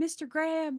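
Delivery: starstruck gushing.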